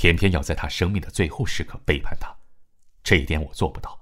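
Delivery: plain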